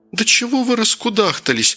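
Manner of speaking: annoyed, clipped retort. Kira, wanting everyone out of the bedroom, snapping irritably at Anya. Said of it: "раздраженно бросила Кира".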